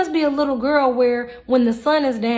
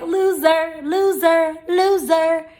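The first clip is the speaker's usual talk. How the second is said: high-pitched, taunting cartoon voice; 5 semitones higher than usual. Saying loser three times, like SpongeBob's loser bit, in a SpongeBob voice. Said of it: "In my SpongeBob voice".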